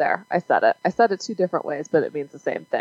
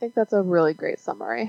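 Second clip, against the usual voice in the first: dry sarcastic tone, pitched higher; 4 semitones higher, 3 dB quieter than usual. Responding to another speaker's movie summary, sarcastic. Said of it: "Are you being sarcastic?".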